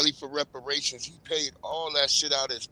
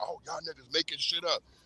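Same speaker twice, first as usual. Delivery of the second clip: mock pissed-off, mad, heated tone; 2 semitones higher, 8 dB quieter than usual. Retelling how a man reacted to being caught on video: imitating someone mad. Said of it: "He was mad at us".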